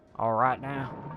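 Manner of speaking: put-on American accent, loud.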